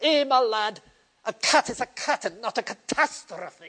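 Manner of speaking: put-on Scottish accent with a schoolmaster tone. A man frustrated with high school students' imagination scolds a boy, Scottish accent. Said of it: "with his Scottish accent would".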